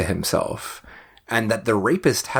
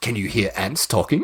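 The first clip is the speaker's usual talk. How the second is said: put-on serious voice. Retelling a character's sudden turn in a scene: imitating Yao Man going serious. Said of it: "Yao Man suddenly goes really serious".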